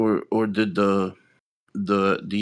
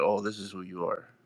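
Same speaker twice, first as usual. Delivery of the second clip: angry, pointed blow-up outburst; 8 dB quieter than usual. Retelling how Trump blew up at Zelensky: imitating Trump blowing up. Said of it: "when he's blowing up Zelensky, he's like".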